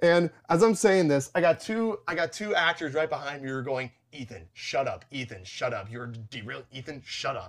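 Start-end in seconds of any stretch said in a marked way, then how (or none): 4.1-7.5 put-on muttering under breath, quieter. Retelling what two actors behind him said: imitating muttering under breath. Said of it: "They're just muttering it under their breath".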